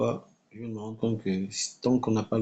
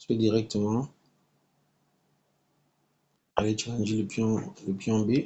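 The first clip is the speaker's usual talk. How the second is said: speaking with mouth full, chewing while talking. Commentating a chess game while eating in bed: talking while eating. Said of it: "je suis en train de manger en même temps".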